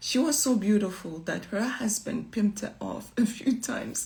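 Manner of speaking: speaking while laughing through the words. Speaker addressing an audience, laughing while speaking. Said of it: "Sorry, I'm laughing".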